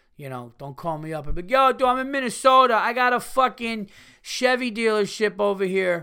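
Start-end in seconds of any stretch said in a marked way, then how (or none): 1.5-6.1 very loud, high, put-on Brooklyn accent. Speaker imagining a Minnesota caller offering a Chevy dealership; put-on Brooklyn accent. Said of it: "I just gave you a fucking Brooklyn accent".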